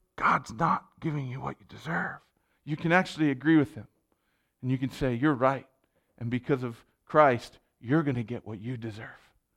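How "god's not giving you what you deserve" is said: hushed, soft, half-voiced stage whisper. Voicing what Satan half-whispers, imitating a half-whisper. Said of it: "and he whispers".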